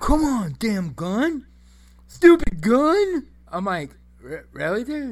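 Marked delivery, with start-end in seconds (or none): 0.0-3.3 put-on yell, higher and louder. Telling a story about a man who dropped his gun in the water, retelling a yell at the gun. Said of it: "he's yelling at the gun".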